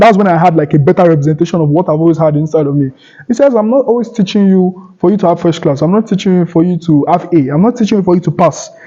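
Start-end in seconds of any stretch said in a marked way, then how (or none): none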